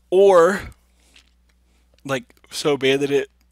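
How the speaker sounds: loud words spoken through a yawn. Tired, explaining how to play a card-game matchup, yawning while talking. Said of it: "I'm yawning".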